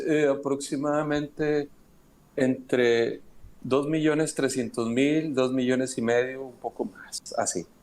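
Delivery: learned, sage-like, know-it-all wise-man voice. Retelling how someone answered him, in a mock wise-man voice. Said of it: "con voz de sabio dice".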